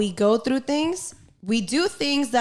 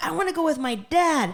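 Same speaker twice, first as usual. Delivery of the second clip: put-on high, yelling ten-year-old girl's tantrum; 7 semitones higher than usual. Retelling a ten-year-old girl's outburst at her mom: imitating a girl yelling. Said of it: "She's yelling at her mom".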